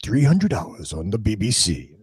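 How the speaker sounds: low, formal announcer voice.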